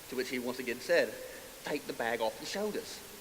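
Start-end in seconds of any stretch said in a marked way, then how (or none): 1.6-3.0 put-on British accent, British man voice. Retelling a man repeating his request to the speaker: British accent. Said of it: "in a British accent".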